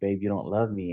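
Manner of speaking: acted-out crying, tearful voice. Recalling suddenly crying alone with their wife, acting out what they said, imitating own crying. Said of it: "I just start crying out of nowhere".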